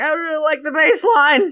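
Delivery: very high, loud, chatty everyday voice. Retelling what Penny said about a demo: imitating Penny. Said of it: "That's what she sounds like when she's off air".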